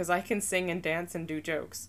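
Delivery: ordinary delivery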